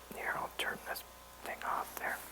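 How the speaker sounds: very quiet whisper under the breath. Turning off a train whistle alarm while talking to the group, whispering aside.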